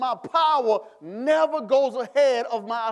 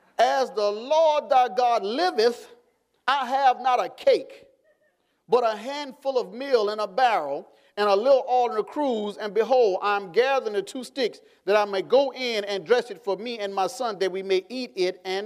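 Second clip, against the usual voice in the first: ordinary talk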